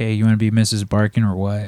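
put-on very casual delivery. Retelling how the proposal went, imitating a very casual proposal. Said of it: "it was pretty much like that".

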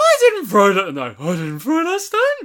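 loud, high, swooping, belted put-on woman voice. Retelling a film scene with Eric Idle as a woman: Eric Idle's put-on woman voice. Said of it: "but putting on the woman voice".

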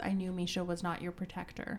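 ordinary talk, nothing marked

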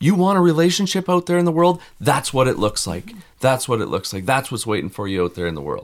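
high-pitched berating scream. Retelling what he shouted at the girls about relationships: imitating someone screaming. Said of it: "And he's screaming at them".

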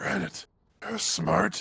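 stealthy, hushed, in-character half-whisper. Sneaking up the stairs, speaking to granite: in-character half-whisper. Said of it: "I'll be whispering to Granite the whole time".

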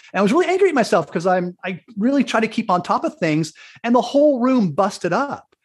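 normal talking voice

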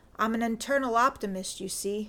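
plain

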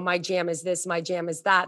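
ordinary delivery

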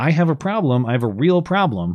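plain

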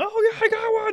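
mock very high, thrilled, excited holler. Speaker recalling what he yelled after hooking a fish, retelling his own yelling. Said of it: "was yelling".

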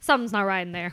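put-on nonchalant, casual child voice. Retelling a three-year-old's casual remark about the bathroom: imitating a nonchalant child. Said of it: "just real nonchalant".

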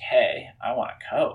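acted playful joking tone. Speaker retelling what they said to their dad after a commercial, retelling a joking remark. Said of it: "I like jokingly said to my dad".

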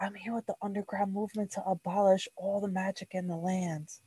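barely audible, very quiet half-whisper. In character during the game, speaking to her while half-whispering. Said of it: "and I just kind of whisper to her".

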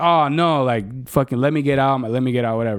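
ordinary talk

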